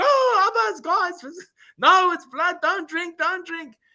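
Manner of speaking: play-acted, shrill, very high screaming child voice. Retelling how a kid reacted to his water trick, imitating someone screaming. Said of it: "he started screaming".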